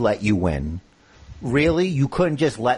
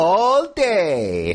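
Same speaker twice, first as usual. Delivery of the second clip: high, mocking drawl stretching out "day"; 5 semitones higher than usual. Retelling how a wrestler mocked his opponent: imitating Garza mocking. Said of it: "I don't know why I said it like that".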